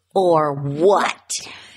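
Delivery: put-on clenched-teeth voice. Recapping a trailer, retelling Erica's reply to Sutton through clenched teeth. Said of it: "through clenched teeth".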